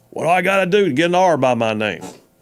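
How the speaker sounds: put-on real, down-home country accent. Retelling a phone call from a caller who wanted to run: real country sound. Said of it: "had real country sound".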